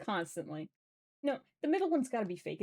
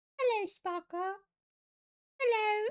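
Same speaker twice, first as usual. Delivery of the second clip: put-on old-timey victorian little peasant boy voice; 13 semitones higher, 3 dB louder than usual. At the start of a stream, the speaker says hello in a little Victorian peasant boy voice. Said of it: "I did a little Victorian peasant boy voice".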